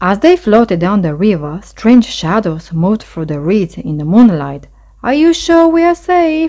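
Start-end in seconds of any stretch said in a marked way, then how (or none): 5.0-6.5 very high, nervous little mouse voice. Floating downriver at night, a little mouse asks his friend: nervous question. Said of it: "little gray mouse asked nervously".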